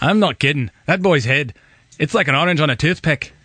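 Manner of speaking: put-on zippy Scottish accent. Quoting a film with another speaker, doing a Scottish accent as Stuart's dad. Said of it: "That's a pretty good Scottish you got down there".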